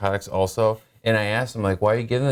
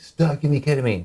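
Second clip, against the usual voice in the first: mock, high-pitched hollered yelling; 6 semitones higher than usual. Retelling waking up from ketamine in hospital: imitating own past yelling. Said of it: "I was yelling at them, like".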